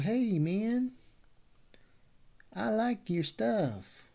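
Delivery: put-on Texas drawl, very high and slow. Speaker imagines people praising his work, voicing them in an imitated texas accent. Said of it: "they can use that accent if they want to".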